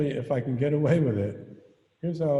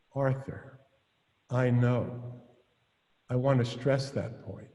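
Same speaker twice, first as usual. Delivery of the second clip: play-acted very calm, sugary-sweet voice. Retelling a partner's reply to a correction: imitating a calm, sweet reply. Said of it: "very calmly, very sweetly".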